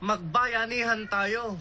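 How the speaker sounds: encouraging tone. Player says the line in an assigned mood during a mood challenge: supportive.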